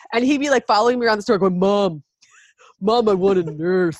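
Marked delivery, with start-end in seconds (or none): 1.6-4.0 very slow, deep, manly voice. A mother retells her little son following her around the store, in a deep manly boy voice. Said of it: "really deep, manly boy voice".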